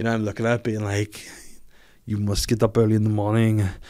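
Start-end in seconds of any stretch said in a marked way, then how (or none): 2.1-3.7 Austrian-accented English, impression. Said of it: "reads it in his accent".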